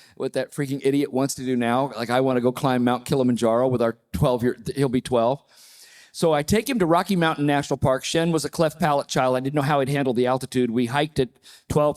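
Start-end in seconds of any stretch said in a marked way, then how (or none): none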